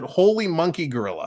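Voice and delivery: ordinary talk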